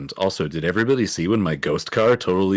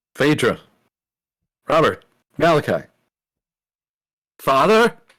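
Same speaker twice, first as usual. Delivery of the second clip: loud, high-pitched yelling-out voice; 7 semitones higher, 5 dB louder than usual. Calling out for the others after a spell breaks: yelling out names. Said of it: "I yell out".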